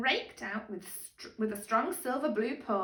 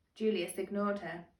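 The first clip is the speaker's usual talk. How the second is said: plain reading voice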